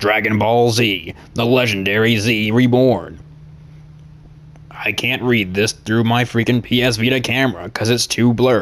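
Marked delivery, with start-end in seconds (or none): 0.0-3.2 slow, epic announcer voice. Reading the back of a DVD case, attempting the Dragon Ball Z narrator voice. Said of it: "I'll try my attempt at the narrator's voice".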